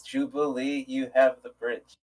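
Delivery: calm, firm, quiet, steady and level voice. Voicing a character handing the bridge to Jubilee: calm and firm. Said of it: "calmly and firmly".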